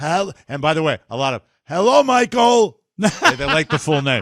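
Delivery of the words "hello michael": put-on rough, swooping Boston accent voice. Retelling how people greeted him by full name, in a put-on rough voice. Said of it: "they all have the rough voices".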